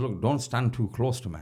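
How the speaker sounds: ordinary delivery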